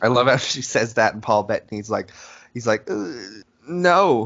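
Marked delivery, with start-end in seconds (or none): 2.9-4.3 put-on nervous voice. Retelling a sitcom scene, imitating Paul Bettany sounding nervous. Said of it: "Why does he say it like that? Like he's, like, nervous".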